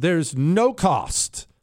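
no cost dragged out slow, weighted, emphatic. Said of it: "I'm gonna stress this".

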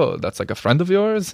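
lilting Brazilian accent.

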